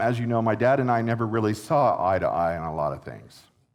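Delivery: ordinary talk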